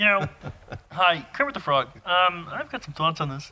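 high, wide-swinging pitch. During a group impression segment, Kermit the Frog impression. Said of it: "it's the impression segment".

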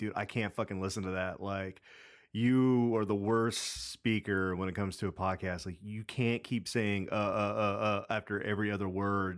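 plain

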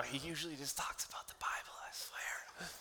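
slow, drawn-out, breathy, very soft whisper. Imitating listeners who brought people here, imitating someone whispering. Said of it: "You're whispering right now".

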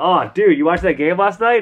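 put-on overacted, intense voice. Retelling how Captain Furlong kicks things off: imitating Captain Furlong. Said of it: "sitting around the break room being like".

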